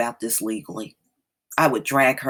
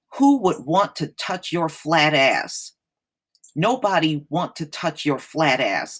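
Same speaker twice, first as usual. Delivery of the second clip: plain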